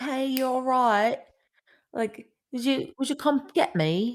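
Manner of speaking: put-on high, dainty, cute little British accent voice. Retelling what she said after a full day of not talking, in a cute little British accent. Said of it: "she says it in this cute little British accent".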